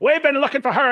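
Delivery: put-on loud, gruff older Irish man's voice. Quoting a man who had been searching for someone, older gruff Irish guy voice. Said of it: "older, gruff Irish guy's like".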